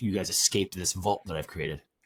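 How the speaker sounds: plain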